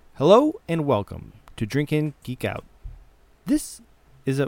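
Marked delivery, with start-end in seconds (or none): 0.2-2.7 loud, stiff, robot-like announcer voice. Opening the show with a welcome line: robotic voice. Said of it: "I was like a robot".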